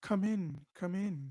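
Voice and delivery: gentle, calming, soothing voice. Narrating a scene, a voice invites in a player who knocked: soothing voice. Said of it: "you just hear just a soothing voice".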